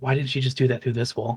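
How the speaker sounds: soft muttering under the breath. A character reacts as someone turns ghostly and phases through a wall, muttering under his breath. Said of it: "under his breath".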